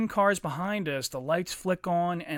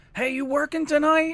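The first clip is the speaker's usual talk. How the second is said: put-on very high, loud hollering; 9 semitones higher, 5 dB louder than usual. Telling how the guy in his car yelled out the window at a girl, retelling a yell out a window. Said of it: "he yells out the window".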